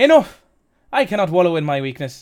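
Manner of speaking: put-on Welsh accent turning Irish. Voicing a female character, Welsh accent slipping into Irish. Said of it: "It's gone Irish again".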